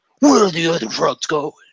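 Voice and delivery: put-on, dropped-down low, gravelly-free interrogator-style voice.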